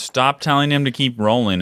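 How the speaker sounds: ordinary talk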